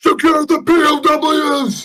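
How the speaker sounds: loud yelling, pitched way up, barked. In a game scene after the enemy tosses out their guns, a player yells to the group: yelling an order. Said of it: "so I just yell like".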